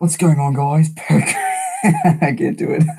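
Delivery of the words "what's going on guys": rough, clumsy attempt at an Australian accent. After thanking a viewer, trying an intro in an Australian accent. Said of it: "Should I say that in an Australian accent?".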